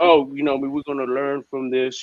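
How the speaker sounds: put-on mock-calm voice. Mocking a captain who won't call his team out, mocking a calm tone. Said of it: "being all calm".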